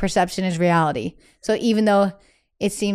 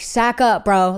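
put-on tough bro talk; 3 dB louder than usual. Retelling how she talks to her partner about feelings: imitating a blunt Massachusetts attitude. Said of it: "I'm so Massachusetts".

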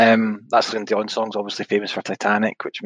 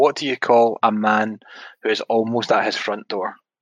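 ordinary talk

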